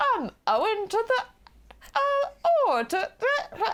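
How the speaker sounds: put-on terrible English accent. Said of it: "terrible English accent".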